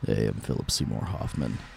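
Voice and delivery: tired, breathy near-whisper, breathed out. Asked to do it now, doing a Philip Seymour Hoffman impression. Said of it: "I can do a killer Philip Seymour Hoffman impression".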